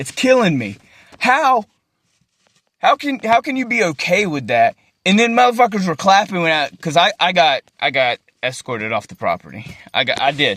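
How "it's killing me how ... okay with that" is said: overcome, voice full of feeling, close to tears. Talking to the camera and unable to look at it, speaker is emotional. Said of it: "it's making me fucking emotional".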